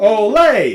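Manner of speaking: very loud, high, drawn-out exclaimed olay. Going over a passage for the cellos and basses: exclaiming "olay!". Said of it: "I always think Olay there".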